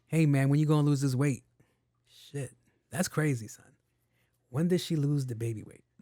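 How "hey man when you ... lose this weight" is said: mock blunt, insincere, rude delivery. Showing how the suggestion should not sound: imitating a blunt, insincere tone.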